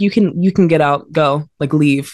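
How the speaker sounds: ordinary talk, nothing marked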